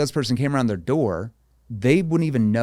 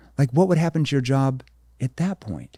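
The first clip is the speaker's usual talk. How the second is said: worried, caring, concerned tone. Demonstrating how the speaker questions people about their plans, in a concerned tone. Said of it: "I go into that concern tone".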